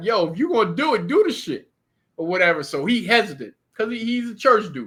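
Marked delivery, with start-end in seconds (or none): 0.0-1.7 acted-out yelling, shout. Recounting urging a hesitant companion to pull off, retelling a yell. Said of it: "I'm I'm I'm yelling at him like".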